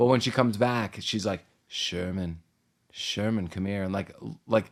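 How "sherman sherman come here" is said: mock vampire voice, lower and quieter. Retelling how she calls the boy over to the TV: imitating a vampire-like call. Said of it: "calls to him, like, like a vampire".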